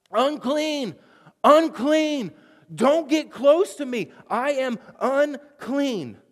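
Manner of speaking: loud, high-pitched yell. Acting out what isolated people had to cry out when approached: acting out a loud yell. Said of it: "you had to begin to yell".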